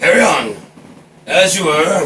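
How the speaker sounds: put-on voice of an old sea captain.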